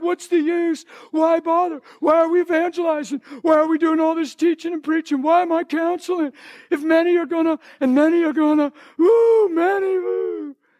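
mock tearful despairing crying out. Recounting a past fit of despair over Jesus' words, retelling crying despair. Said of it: "So I'm crying. I'm like".

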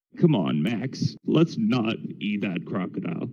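soft, swooping, sing-song cartoon voice. Put on the spot by the host for your best imitation, Sam voice imitation. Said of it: "Give us your best Sam and Max voice imitation".

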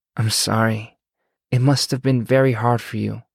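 soothing, comforting, calming tone. Narrator reading Miriam responding to Alex's story, in a soothing tone. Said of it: "Miriam said in a soothing tone".

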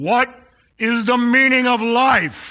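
slow, loud booming voice.

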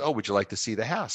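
ordinary talk

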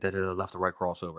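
muttered whisper under breath. Describing a man recreating his moves and whispering to himself, imitating a whisper under his breath. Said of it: "he's whispering to himself under his breath".

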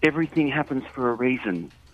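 plain

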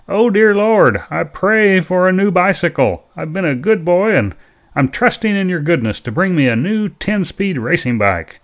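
mock yelling at the top of the lungs. Retelling a brother's bedtime prayer, imitating a yell at the top of his lungs. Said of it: "he began yelling at the top of his lungs".

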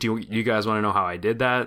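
ordinary talk, nothing marked

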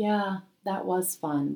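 acted, mock deadpan delivery. Acting out someone at a reunion hearing old stories, mock deadpan reply. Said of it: "you're sitting there deadpan".

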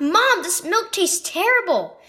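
sudden high exclamation. London, after spitting out her milk, tells her mom, exclaiming. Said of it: "London exclaimed".

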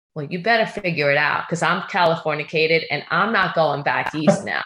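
imitated deadpan, flat delivery. Retelling a husband's reply about the job: imitating a deadpan reply. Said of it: "And he looked at me deadpan".

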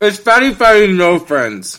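very loud, high-pitched, shouted through a full mouth. Tasting peanut butter combinations and speaking while still eating, talking with mouth full. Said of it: "it sounds like you have so much food in your mouth right now".

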